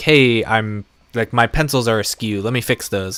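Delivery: normal talking voice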